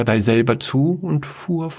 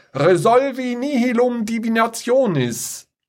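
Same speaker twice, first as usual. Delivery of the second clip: piercing, very high-pitched roaring bellow; 11 semitones higher than usual. A woman hurls a spell at a dark magician, bellowing. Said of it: "und dann brüllte sie".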